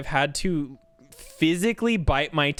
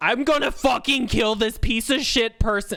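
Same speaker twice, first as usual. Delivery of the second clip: furious, high, screaming rage; 4 semitones higher than usual. Acting out what a service worker wants to scream at a customer after muting themselves. Imitating screaming profanities. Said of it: "The true test of a customer service voice".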